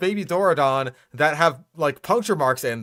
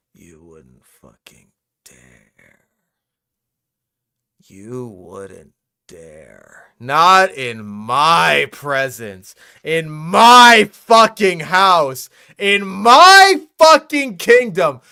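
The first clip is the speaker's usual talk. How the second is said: very loud, furious, climbing, swooping livid rant; 3 semitones lower, 10 dB louder than usual. Reacting to a video's claim about Allosaurus: livid angry rant. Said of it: "I'm livid".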